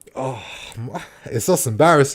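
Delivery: words broken up by laughter. Apologizing for laughing at a bad moment, laughing while talking. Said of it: "I don't know why I'm laughing".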